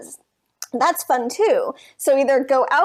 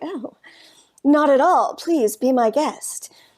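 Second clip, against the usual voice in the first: trying hard to sound sultry. Retelling a reply to a man who asked if the bar seat was taken, mock-sultry attempt. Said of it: "in my attempt at being like sultry".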